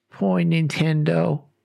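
mock heartbroken, saddest-sounding voice. Retelling the youngest brother's reaction after the family lost everything, imitating the saddest voice. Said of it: "in the saddest voice you are going to hear".

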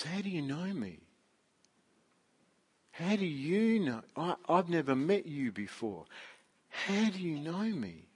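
halting, stunned, stammering, tripping over words. Retelling Nathaniel's reply to Jesus, acting out Nathaniel's stammer. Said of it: "he kind of stammers this reply".

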